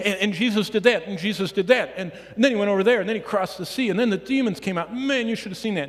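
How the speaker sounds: rapid-fire, breathless, words tumbling out with no pause. Speaker acts out Peter telling the story, talking as fast as he can. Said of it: "Peter's talking as fast as he can".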